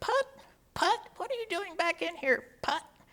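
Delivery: tiny, very high, quick little voice. Act out the judge, tired of seeing Hubert Putt in court, in Judge Draper's little voice. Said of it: "he he in his little voice would say".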